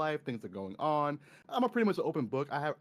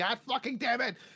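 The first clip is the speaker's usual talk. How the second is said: very high, cartoonish, animated yell; 9 semitones higher, 3 dB louder than usual. Showing how they react to getting hit by enemies: imitating own animated yell. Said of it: "you hear the animated voice in me".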